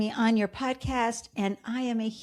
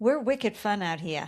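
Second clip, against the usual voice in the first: Bostonian accent. Answering a remark about boston: boston accent. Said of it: "I love when the Boston accent just sneaks in there".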